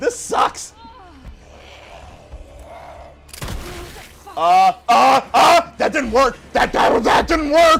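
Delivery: loud, high-pitched, terrified, stammering panic. Fleeing a monster in a horror game, just said it's terrifying: terrified panic. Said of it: "I'm terrified".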